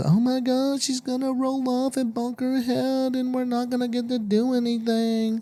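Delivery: very high, frantic, worried fussing voice. Retelling a worried remark about the baby rolling off the bed: imitating Jordan's worried voice. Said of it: "What is that voice?".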